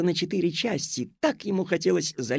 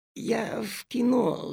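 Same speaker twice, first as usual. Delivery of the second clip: longing, wistful mutter, higher pitch; 6 semitones higher than usual. Narrator reads Aleshka's reply to Madam Greed, muttering with longing. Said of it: "с тоской пробормотал Алешка".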